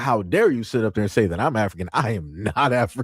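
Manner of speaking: acted indignant, outraged, aggressive, offended. Retelling a woman's offended reply in a clip: imitating an aggressive, offended retort. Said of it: "She said it as aggressive as possible 'cause she was offended".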